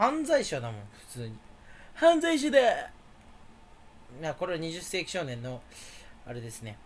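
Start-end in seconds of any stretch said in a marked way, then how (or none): 1.9-2.9 shrill, very high manga villain voice. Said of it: "あいつのものまねです".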